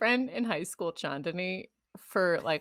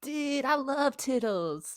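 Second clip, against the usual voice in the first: very slow, high stoner surfer drawl; 6 semitones higher than usual. Acting out someone learning the word: stoner surfer dude voice. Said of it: "some sort of stoner surfer dude".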